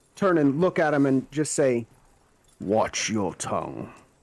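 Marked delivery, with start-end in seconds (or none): 2.6-4.0 husky, intimidating, really deep rumbling voice. A player voices his character turning to face another man, really deep husky voice. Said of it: "in the really deep husky voice".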